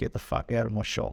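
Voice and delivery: ordinary talk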